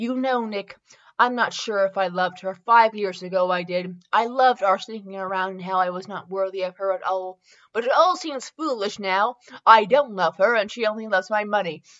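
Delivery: ordinary delivery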